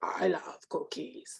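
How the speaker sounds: dropped low and breathed out. A teacher describing Cookie Monster to students, Cookie Monster voice. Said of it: "That's usually how Cookie Monster talks".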